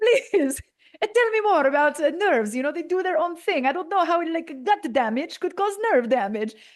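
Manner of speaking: botched fake Italian accent. Retelling how the professor asked you to tell him more, in a botched Professor Durante Italian accent. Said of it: "I'm about to botch this accent".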